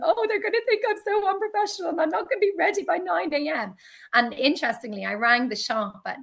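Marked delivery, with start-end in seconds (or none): 0.0-3.7 very high-pitched tearful crying words. Retelling being up till four a m making labels: imitating own past crying. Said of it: "just crying, going".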